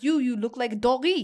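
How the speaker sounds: put-on French accent, high and loud. Retelling what a man said to them, in a French accent. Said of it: "I'm going to say this in my French accent".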